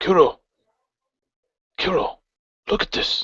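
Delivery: hushed voice, a touch high-pitched. A player voices his character calling to a companion to look, in a hushed tone. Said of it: "in a, a hushed tone".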